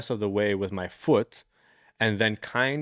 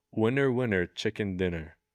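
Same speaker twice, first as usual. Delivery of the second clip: imitated seductive, sexy voice. Retelling what he said while looking at the speaker, mimicking his sexy voice. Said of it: "still in his sexy voice says".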